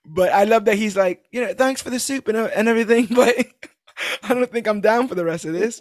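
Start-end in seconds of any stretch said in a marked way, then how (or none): 1.4-5.9 high, laid-on put-on British accent. Retelling a scene, quote him with Steven Grant's British accent impression. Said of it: "my impression of Stephen Grant's impression of a British person".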